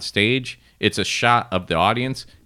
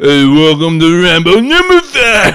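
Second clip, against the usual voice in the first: very loud, high-pitched action-hero mumble; 9 semitones higher, 12 dB louder than usual. Joking about another sequel, the speaker does the voiceover in a mumbling Rambo voice. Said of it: "they have me doing the voiceover".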